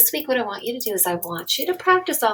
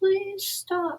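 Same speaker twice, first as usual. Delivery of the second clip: timid, weak, limp, very high-pitched voice; 10 semitones higher than usual. Showing the group the wrong way to tell someone to stop, weak and unconvincing. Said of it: "None of this".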